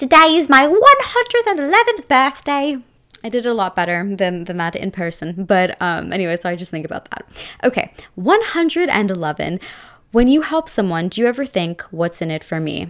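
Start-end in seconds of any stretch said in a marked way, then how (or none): 0.0-2.8 put-on old fantasy creature voice, higher, slower. Recalling announcing a 111th birthday: Bilbo voice. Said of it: "I had a whole Bilbo voice".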